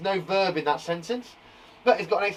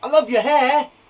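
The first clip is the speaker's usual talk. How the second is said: emphatic exclamation, loud and high; 5 semitones higher, 7 dB louder than usual. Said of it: "It adds the emphasis".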